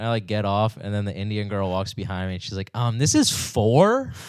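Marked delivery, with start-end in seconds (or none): 2.7-4.1 very slow, pointed, suspicious, wary, raised pitch. Retelling what a girl said on leaving the elevator: imitating a wary, pointed question. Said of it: "she said it in that voice".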